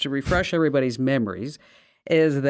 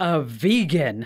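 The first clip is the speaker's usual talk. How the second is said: put-on, spiteful, nasty, malicious tone. Retelling what a woman who came over said, imitating a malicious remark. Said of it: "hear the malice in her voice".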